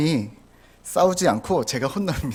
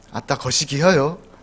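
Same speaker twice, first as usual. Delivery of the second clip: Jeolla dialect, a bit stiff. Showing how Jeolla people say I love you, put-on Jeolla accent. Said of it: "전라도는 어떻게 한다고요? ... 이렇게 한답니다. 제가 서울 사람인 거여서 이 억양이 좀 어색한".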